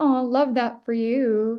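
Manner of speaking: sweetly condescending, slow, cute teasing. Discussing whether a phrase sounds condescending, said in cute teasing, slightly condescending tone. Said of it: "kind of like teasing".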